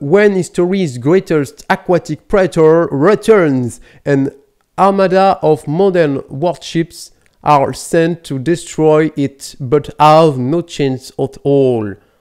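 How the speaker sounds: English spoken with a French accent. A French speaker reads a film's English tagline aloud: French-accented English. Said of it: "Notez mon accent anglais".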